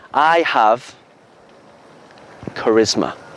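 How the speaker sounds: slow delivery, each word set apart by pauses. Demonstrating how to say a short phrase, with pauses. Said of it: "you want to try pauses".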